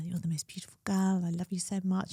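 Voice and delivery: hushed, sweet, whispered voice. Retelling words said to the puppy while rocking her: retelling a whisper. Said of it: "whispering at her".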